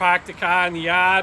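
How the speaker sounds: very loud, poorly faked Boston accent. Speaker describes parking near a Dunkin Donuts: put-on Boston accent. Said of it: "That's my best Boston accent".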